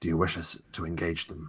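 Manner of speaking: quiet, soft, hushed half-whispered voice. A narrator voices a character looking across to another, in a hushed half-whisper. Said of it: "he says in a hushed whisper".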